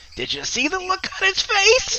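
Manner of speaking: very high, shrill, swooping, loud creature cackle. A game narrator voices a mischievous creature speaking to the players, cackling creature voice. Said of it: "The creature cackles".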